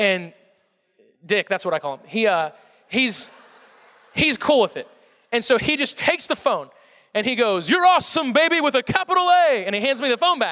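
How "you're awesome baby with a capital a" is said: high-pitched, passionate, rhythmic delivery. Retelling what the sportscaster said on the phone: Dick Vitale impression. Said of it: "He's famous for his cadence and his passion".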